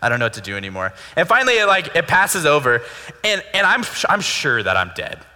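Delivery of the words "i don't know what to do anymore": put-on, weary, fed-up, exasperated sighing. Retelling a mom who has had enough: imitating mom's exasperated sigh. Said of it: "sits back and just sighs".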